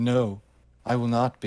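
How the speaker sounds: ordinary talk, nothing marked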